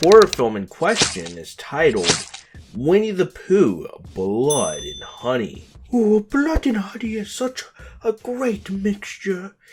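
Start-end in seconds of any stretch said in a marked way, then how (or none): 5.9-9.5 very high, badly done cartoon bear voice. A video host introducing a horror film does a terrible Winnie the Pooh impression. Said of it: "my terrible Winnie the Pooh impression".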